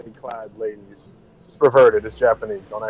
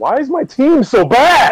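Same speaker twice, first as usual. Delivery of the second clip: very high, swooping, yelling outburst; 13 semitones higher, 8 dB louder than usual. Complaining to the others about their bad team, shouting. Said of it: "Why are you shouting at us?".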